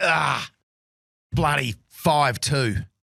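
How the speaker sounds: put-on furious, angry tone. Retelling own reaction after tapping in for a five: imitating own furious remark. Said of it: "and I'm furious".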